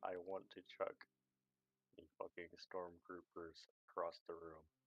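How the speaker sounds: whispered. A character leans in to whisper in his buddy's ear: whispering in his ear. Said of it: "He's going to whisper in his ear".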